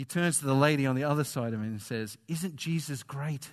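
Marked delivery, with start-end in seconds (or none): 2.3-3.5 put-on, bursting with eager, overwhelmed delight. Retelling how a friend turned to the lady beside him, retelling an excited question. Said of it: "overwhelmed for a second time with excitement".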